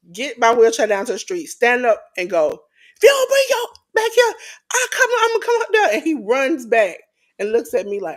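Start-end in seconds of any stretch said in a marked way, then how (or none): 2.5-5.9 mock shrill, very high, scolding yell. Retelling calling a runaway dog back from the street: imitating own screaming at a dog. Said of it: "in the street screaming at a dog".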